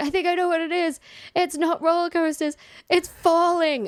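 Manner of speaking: very high, urgent yell. Speaker retells calling out to a friend as the ride dropped, retelling a yell to a friend. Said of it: "I remember I yelled to my friend".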